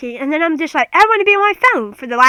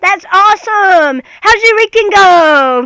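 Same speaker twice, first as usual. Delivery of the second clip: blaring, loud, high yelling; 5 semitones higher, 4 dB louder than usual. Acting out how a loud-speaking woman talks in conversation, imitating someone yelling. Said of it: "Sorry for the listeners that I'm screaming".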